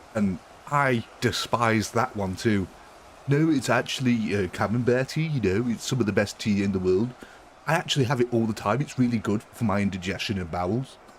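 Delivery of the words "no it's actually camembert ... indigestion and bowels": put-on posh London accent, words rattled off quickly. Showing off accents you despise, doing a posh london accent. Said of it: "the posh London accent".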